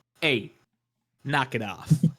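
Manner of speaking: terrible put-on Italian accent, laid on thick. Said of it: "In the worst Italian accent".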